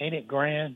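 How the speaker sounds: soft, gleeful gloating tone.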